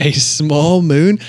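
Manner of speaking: mock wondering voice, slow and loud.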